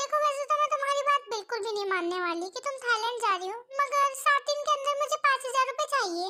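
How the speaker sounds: furious, angry, demanding scolding tone. A landlady answers her tenant who claims she is going to Thailand: very angry. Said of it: "ये देख के तेयों की मकान मालकिन को बहुत गुस्सा आता है, / ये देख के तेयों की मकान मालकिन को बहुत गुस्सा आता है, / ये देख के तेयों की मकान मालकिन को बहुत गुस्सा आता है".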